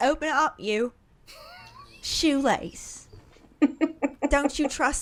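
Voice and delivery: put-on Cockney accent. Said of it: "Does she not sound so Cockney".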